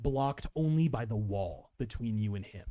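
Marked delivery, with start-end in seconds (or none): none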